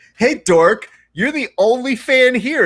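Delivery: very high-pitched, shouted, jeering yell. Acting out the other speaker yelling a greeting at a fighter: imitating someone yelling. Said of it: "when you are yelling at him like".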